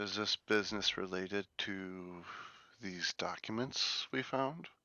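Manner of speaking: hushed, soft, secretive tone. Playing a character in a role-play scene, questioning a woman in a hushed tone. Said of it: "Like performing with a hushed to- tone".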